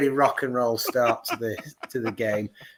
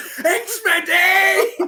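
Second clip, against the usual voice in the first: shout, higher and louder; 6 dB louder than usual. Retelling a goal celebration, shouting at people nearby: retelling a shout. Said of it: "who was getting shouted".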